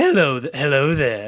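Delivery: stumbling, restarting, staying high, nowhere near deep. Showing how the actor really sounded: Sidney Greenstreet impression. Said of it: "Sidney Greenstreet did not have a deep voice at all. He was like".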